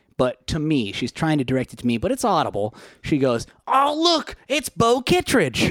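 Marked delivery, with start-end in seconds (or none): 3.7-5.7 thrilled, very high, loud excited blurt. Retelling how a woman spotted someone and spoke up: imitating an excited loud exclamation. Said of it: "starts to to say loudly because she's a little excited".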